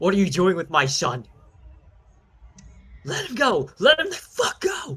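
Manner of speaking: very high, very loud, shrill, climbing raging scream. Voicing a furious father who wakes to find captors holding his son: screaming in rage. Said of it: "he screams at you".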